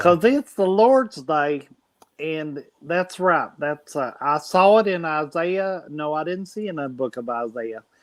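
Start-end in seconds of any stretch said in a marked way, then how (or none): 0.0-5.8 put-on slow, drawn-out, drunk Southern accent. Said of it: "Drunk and, uh, Southern accent".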